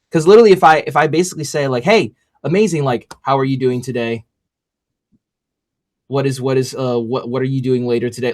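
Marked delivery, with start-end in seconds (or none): 1.9-8.4 boring, dull, nonchalant, uninterested offhand tone. Speaker demonstrates a greeting that draws no interest, boring and nonchalant. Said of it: "that sounds super boring and nonchalant".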